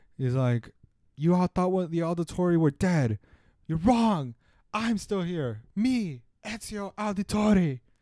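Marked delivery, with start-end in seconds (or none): 1.2-7.8 shrill, loud, screamed out. Retelling a game scene where the hero screams: imitating Ezio screaming. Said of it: "he screams out loud".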